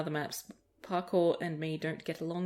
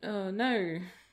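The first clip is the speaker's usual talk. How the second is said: slightly sorry, sad-sounding tone; 2 semitones higher than usual. Retelling own answer to a child's question: retelling own sad reply. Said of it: "kind of sadly".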